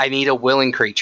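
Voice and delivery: ordinary delivery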